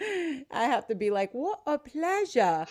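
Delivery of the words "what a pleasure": higher-pitched, borrowed put-on British accent. Showing how she repeats a british teacher's phrase: imitating a british accent. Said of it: "I say it with that accent".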